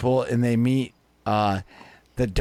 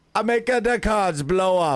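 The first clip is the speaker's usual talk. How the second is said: bad put-on French accent, pitched up; 8 semitones higher than usual. Retelling a movie scene, answering what his power is, in a terrible French accent. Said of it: "I do a terrible French accent".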